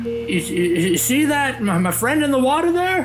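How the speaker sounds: high, excited character voice.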